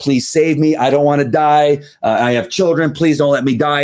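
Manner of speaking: mock screaming. Describing a training drill, the speaker quotes a downed officer, retelling a screamed plea. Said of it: "he's screaming that he's been".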